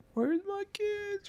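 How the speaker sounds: high, slow, soft crying ghost wail. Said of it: "somebody just crying and saying".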